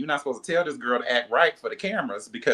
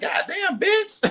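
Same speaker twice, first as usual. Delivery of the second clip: mock, very high, floored, shocked outburst. Retelling own reaction to watching the confessionals: retelling own shock. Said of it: "I'm like".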